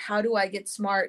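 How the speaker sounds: ordinary talk, nothing marked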